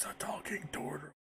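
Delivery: whispered aside. Leaning in to another character as if whispering: whispering aside. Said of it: "I put my hand up like I'm whispering to her".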